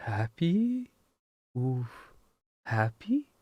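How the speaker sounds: soft, bewildered, puzzled creature voice. Voicing a creature who is asked if it is happy: confused creature voice. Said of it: "a little bit confused".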